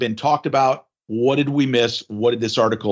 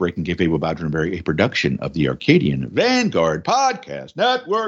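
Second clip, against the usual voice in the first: sing-song, climbing announcer read, pitch rolling throughout; 5 semitones lower than usual. Podcast host reads the show's network plug, voice rising and falling. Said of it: "Why am I raising and lowering my voice like this?".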